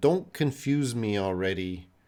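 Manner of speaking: normal talking voice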